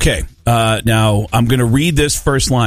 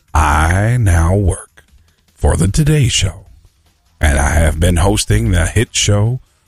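deep, low, slow, unhurried narrator voice; 4 semitones lower than usual. Reading a third quiz clue in an impression that sounds like Morgan Freeman. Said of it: "sounds more like Morgan Freeman".

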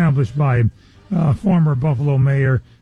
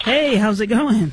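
high, very slow, drawn-out, extra-eager enthusiastic tone; 7 semitones higher than usual. Greeting the audience again after being asked for more enthusiasm: more enthusiastic. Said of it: "A little more, uh, enthusiastic".

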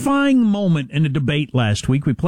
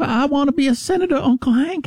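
put-on Southern young woman voice, higher; 10 semitones higher than usual. Mocking a candidate's way of speaking: Luann from King of the Hill voice. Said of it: "That's what she sounds like".

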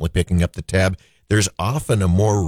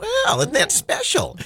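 prim, very high-pitched voice. On the radio, after saying you sound like her, do the Church Lady voice. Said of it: "I sound like the church lady".

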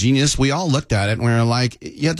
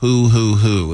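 put-on owl-like hooting sound; 3 dB louder than usual. On a radio show, the guest asks 'who?' as a joke: owl hoot impression. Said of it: "That was my owl impression".

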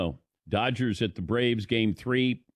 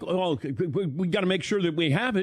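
high, panicked, stumbling stammer with mock, flustered worry; 8 semitones higher than usual. Retelling a colleague's question about a missing book: imitating Todd sounding panicked. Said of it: "Did I say it like that in a panicked way?".

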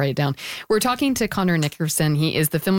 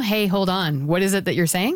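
usual speaking voice

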